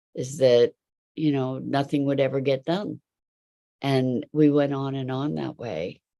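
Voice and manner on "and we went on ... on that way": ordinary talk, nothing marked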